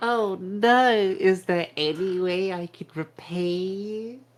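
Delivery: loud, high-pitched, suggestive tone dripping with innuendo. Player's character offers to repay a woman who said keep the change, voice laden with double meaning. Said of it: "A voice laden with like double meaning".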